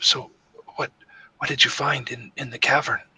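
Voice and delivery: drop to a hushed stage whisper. Voicing Ariana as she pulls Dratan aside so nobody can hear, whispering quietly. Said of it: "she whispers um, uh, quietly".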